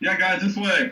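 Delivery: loud hollered calling yell. A player character calls to companions right next to him, yelling. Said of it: "Did you have to yell?".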